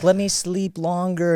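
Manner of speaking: small, sweet, cute voice, very drawn out. Retelling a morning when a child would not get up: imitating a cute little voice. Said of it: "It's a cute little voice like".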